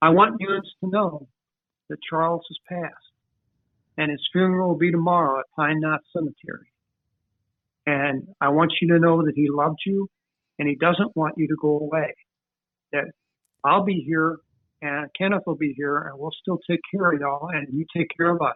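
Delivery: ordinary delivery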